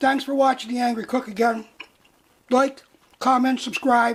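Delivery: talking with mouth full. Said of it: "I have my mouth full".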